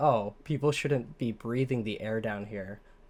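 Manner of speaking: ordinary talk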